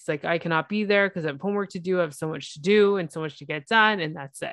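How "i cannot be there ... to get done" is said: usual speaking voice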